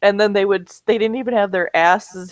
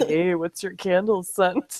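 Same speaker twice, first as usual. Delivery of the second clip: gentle, unhurried voice. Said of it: "This is Gracious going".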